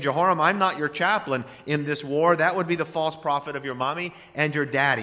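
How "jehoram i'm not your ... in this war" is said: ordinary delivery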